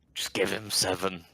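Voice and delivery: hushed whisper. Whispering in character to the farmer about the payment: whispering. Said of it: "I'm gonna whisper to the farmer".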